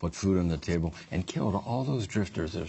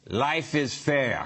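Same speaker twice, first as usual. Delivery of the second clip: put-on, high Russian accent; 7 semitones higher than usual. Joking about a Russian guy who worked at the fair: Russian accent. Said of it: "How about that for a Russian accent?".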